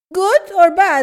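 high, loud broken English, spelled out word by word.

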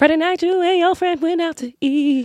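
very high, gurgling little voice. Impersonating a person for a partner to guess, in a gurgling little voice. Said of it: "I love when you do that little voice. Like, it's like gurgling".

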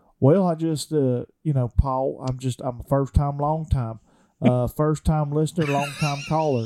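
put-on South Georgia accent. Answering a request to do the accent: South Georgia accent. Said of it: "give us a South Georgia accent".

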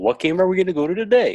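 put-on Finnish accent. Joking about Carolina's scouts, the speaker voices them in a Finnish accent. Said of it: "How long have you been working on your Finnish accent?".

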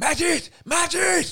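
acted panicked shouting. Retelling losing track of a little boy as cars arrive: retelling a panicked shout. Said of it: "Og jeg råber".

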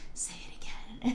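creepy, soft, unvoiced mock whisper.

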